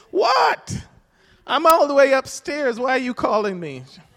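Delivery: high, loud, annoyed yell.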